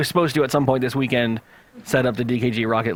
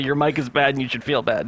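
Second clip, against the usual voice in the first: ordinary talk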